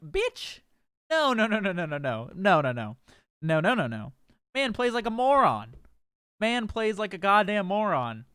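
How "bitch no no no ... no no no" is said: put-on firm, low, swooping, emphatic delivery. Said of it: "and I'm like".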